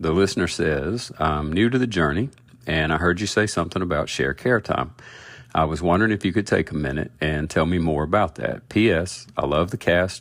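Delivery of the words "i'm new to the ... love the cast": ordinary delivery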